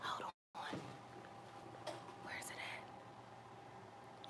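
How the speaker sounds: soft, hushed whisper. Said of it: "I don't know why I'm whispering".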